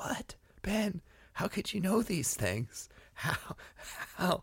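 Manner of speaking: poor, hushed, breathy whispered voice. Giving the audience a voice on the podcast: bad Jim Gaffigan impression. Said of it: "like I'm doing a bad Jim Gaffigan impression".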